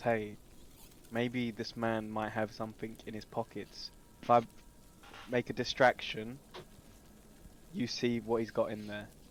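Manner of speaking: quiet, soft, hushed whisper under the breath. Speaking in character to another player's character: whispering. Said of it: "I whisper to Dilly Douglas".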